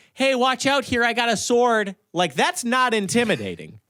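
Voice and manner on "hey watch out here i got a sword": ordinary everyday Midwestern American accent. Joking that a sword fighter isn't intimidating, in a standard Midwestern accent. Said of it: "standard ass Midwestern accent".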